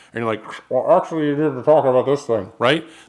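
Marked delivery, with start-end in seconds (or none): 0.6-2.5 tinny, tin-can voice as through an intercom. Imitating a producer talking in over a studio intercom: tin canny producer voice. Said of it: "kinda tin canny voice".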